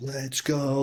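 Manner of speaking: put-on, all-fired-up, hyped, excited cheer. Retelling seeing breaking news on TV while clapping: retelling a hyped cheer. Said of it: "I'm getting all hyped".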